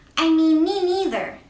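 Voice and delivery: tiny squeaky mouse voice. Reading a story aloud, the mouse speaks up to the boars, in a tiny little voice. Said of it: "said a tiny little voice".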